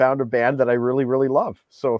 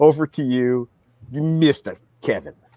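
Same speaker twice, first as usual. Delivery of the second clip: put-on supervillain voice. Handing over to the next speaker: mock Bond supervillain voice. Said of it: "like I'm trying to be a Bond supervillain".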